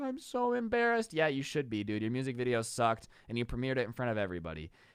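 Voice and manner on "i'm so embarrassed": acted-out, high, weepy, tearful, blubbering crying voice. Retelling a student huddled with friends: imitating someone crying.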